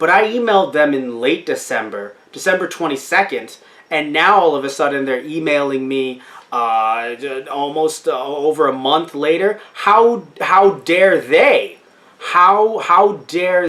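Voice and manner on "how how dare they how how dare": slow, sarcastic indignation, repeating itself. Reacting to a late email reply from a company: sarcastic outrage. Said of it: "I'm being sarcastic".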